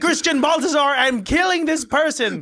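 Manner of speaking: mock villain voice, high, loud, grand shout.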